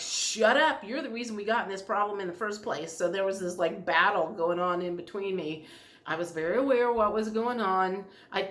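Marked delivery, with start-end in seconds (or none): none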